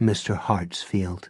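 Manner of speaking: ordinary delivery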